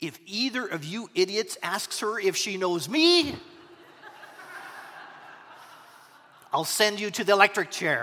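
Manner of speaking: ordinary talk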